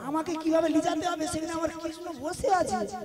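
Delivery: soft, quiet muttered aside. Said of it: "কি গুজগুজ করতেছিস".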